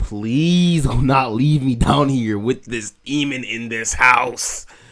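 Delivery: put-on desperate begging, pleading with everything. Retelling begging the parent not to leave: retelling own pleading. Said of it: "I was begging, I was pleading".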